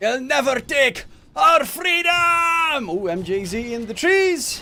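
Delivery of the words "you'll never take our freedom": loud, high, showy, proud put-on Scottish accent. Joking about his own voice, the speaker says the line in a Scottish accent. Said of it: "in my beautiful Scottish accent".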